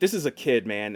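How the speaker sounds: ordinary talk, nothing marked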